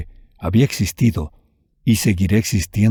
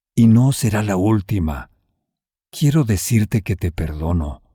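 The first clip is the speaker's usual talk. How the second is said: usual speaking voice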